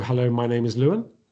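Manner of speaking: upspeak, rising uptick at sentence end. Showing how upspeak sounds when introducing yourself, upspeak. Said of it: "It's that uptick at the end".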